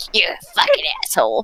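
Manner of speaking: very soft, hushed, eerie fairy voice. Speaker tells off the guy making fun of them, in the scariest fairy voice. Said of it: "like the scariest fairy voice that I can do".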